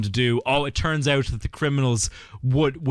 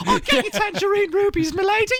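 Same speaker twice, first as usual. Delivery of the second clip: put-on cockney urchin voice, higher. Mocking the other speaker's impression: Artful Dodger voice. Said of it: "You sounded more like the Artful Dodger".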